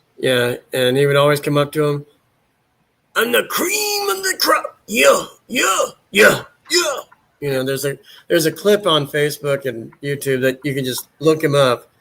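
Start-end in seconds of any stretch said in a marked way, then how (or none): 3.1-7.0 very high, boastful wrestling promo delivery. Retelling how he spoke to the announcer: Macho Man impression. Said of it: "my impression of Macho Man is".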